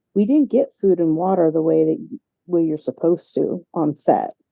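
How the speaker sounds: ordinary delivery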